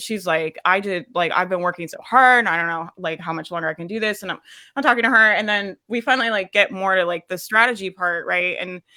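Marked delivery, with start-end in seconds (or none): 0.6-4.2 imitated upset, crying voice. Retelling a client's words on a coaching call: imitating someone upset and crying.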